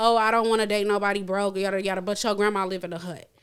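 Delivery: ordinary talk, nothing marked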